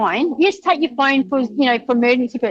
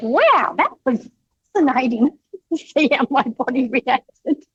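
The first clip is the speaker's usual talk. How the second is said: mock super-excited, gushing, marvelling exclamation. Retelling a runner's words after he stopped the race: imitating excited speech. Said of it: "But he was just super excited".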